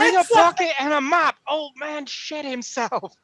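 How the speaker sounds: shrill, very high-pitched, loud hollering yell. A character at an arrow slit calls out the window; yelling out a window. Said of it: "And he yells out the window".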